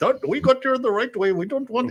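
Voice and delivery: put-on awful Indian accent, very high-pitched. Imitating a man from India heard on the radio: worst Indian accent ever. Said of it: "it's the worst accent ever".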